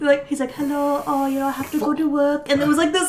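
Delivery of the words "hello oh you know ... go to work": put-on soft girly voice. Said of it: "like, girly voice".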